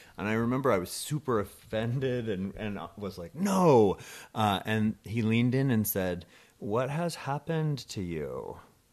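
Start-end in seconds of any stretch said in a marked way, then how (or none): 6.6-8.6 menacing and sing-song voice. Retelling what a man leaned in and asked the speaker, like a Bond villain. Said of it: "Did he say it like a Bond villain".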